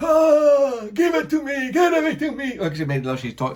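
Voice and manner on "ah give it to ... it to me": put-on old man voice, higher. Retelling what she said during the encounter: imitating her old-man-sounding voice. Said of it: "she sounds like an old man".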